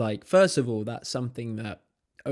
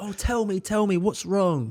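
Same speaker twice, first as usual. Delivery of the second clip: mock desperate pleading tone, higher pitch; 8 semitones higher, 3 dB louder than usual. Mocking people who beg for gossip: imitating someone desperate to know. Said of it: "they're desperate for the".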